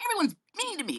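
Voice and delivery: put-on, high, self-pitying whiny complaining tone. Mocking people who feel like victims: imitating a whiny complainer. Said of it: "They're just whiny".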